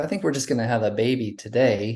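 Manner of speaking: ordinary talk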